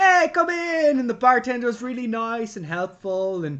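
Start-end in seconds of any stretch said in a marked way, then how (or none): 0.0-1.0 put-on high-pitched Italian accent, called out. Retelling a film scene where George walks into Martini's pub, Martini's Italian accent. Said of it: "That was my Italian accent".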